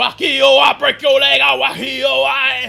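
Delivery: creaky, loud, rough, drawn-out creature bellowing. Narrating a game scene, speaker voices the shouting guy raising an alarm, shouting louder. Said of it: "the shouting guy just shouting louder".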